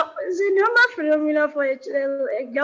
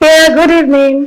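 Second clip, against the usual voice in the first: very loud, thrilled, excited voice; 13 dB louder than usual. Greeting the interviewer on joining: loud, very excited greeting. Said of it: "That was quite loud".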